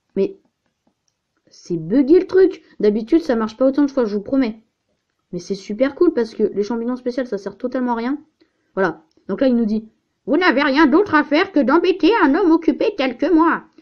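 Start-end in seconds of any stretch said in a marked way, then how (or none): 10.2-13.5 high, put-on old granny voice. Gamer voicing a game character's line aloud, in an old granny voice. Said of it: "Excusez-moi pour ma voix de mamie pépé".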